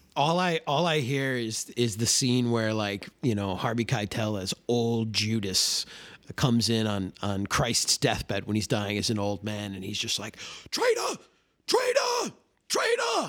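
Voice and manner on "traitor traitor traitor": angry, shrill scream, very high. Describing a film scene where old Judas confronts Christ, imitating Harvey Keitel screaming. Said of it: "I just hear Keitel screaming at him like that".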